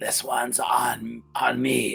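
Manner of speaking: rasping voice. Narrating a scene, voicing Shoma calling out from the bar corner: raspy Shoma voice. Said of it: "it's kind of a raspy voice".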